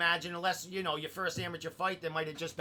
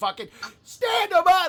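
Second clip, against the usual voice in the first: shrill, high-pitched screaming shout; 13 semitones higher, 13 dB louder than usual. Telling the fighter how he watched his fight: retelling a scream. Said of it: "I'm screaming".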